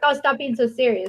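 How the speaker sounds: plain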